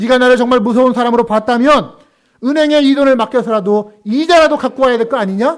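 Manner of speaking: loud, high-pitched angry shouting.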